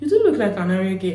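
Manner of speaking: normal talking voice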